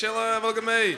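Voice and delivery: high mocking show-off voice.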